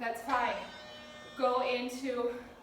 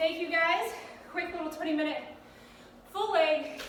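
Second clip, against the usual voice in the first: winded, breathless, panting, still catching breath; 4 semitones higher than usual. Thanking everyone after a quick twenty-minute full-leg session, out of breath. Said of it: "Let me catch my breath".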